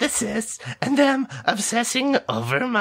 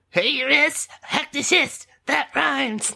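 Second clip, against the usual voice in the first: mock puberty voice, put-on; 4 semitones higher than usual. Playing a co-host in a show intro skit, in a puberty voice. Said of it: "your uh, puberty voice is pretty good".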